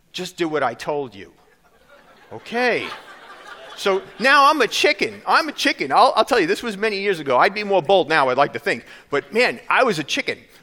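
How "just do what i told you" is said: put-on motherly tone. Speaker retells the nurse's reply at the nurse station, retelling a mother tone. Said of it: "give me that mother tone".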